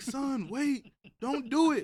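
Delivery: very high, very loud, drawn-out yell. Retelling a scooter crash, imitating dad yelling. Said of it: "He's ye-, he's yelling like".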